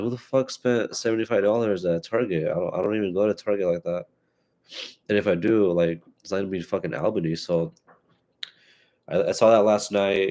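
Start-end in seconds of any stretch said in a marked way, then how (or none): none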